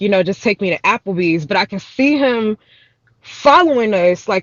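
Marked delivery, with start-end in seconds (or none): none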